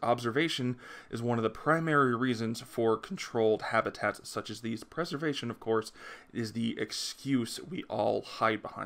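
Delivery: normal talking voice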